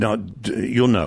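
ordinary talk, nothing marked

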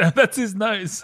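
high, slow, amused, laughing voice.

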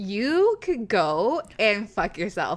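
slow, put-on drunk, boozy, tipsy voice. Showing how they talk when drunk, put-on drunk voice. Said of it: "in my drunk [name] voice".

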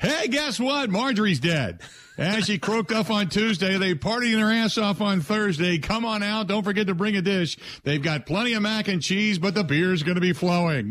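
upbeat, cheerful delivery. Joking about how obituaries could not be read on air: mock upbeat obituary read. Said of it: "you couldn't do it upbeat".

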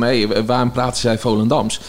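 plain

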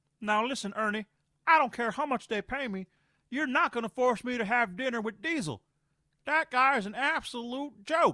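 high, blunt ranting voice. Talking about Inside the NBA, doing a Charles Barkley impression. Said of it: "My impression's not that far off".

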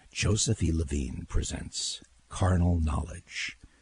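movie trailer announcer voice. Asked to show his old trailer work, announcing a film in a movie trailer voice. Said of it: "do the voice. Let's hear the [name] trailer voice".

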